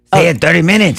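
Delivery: high, loud, belted cartoon Mexican accent. Show the others how Salo would say it, in a Speedy Gonzales voice. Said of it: "Why did I make Salo sound like Speedy Gonzalez?".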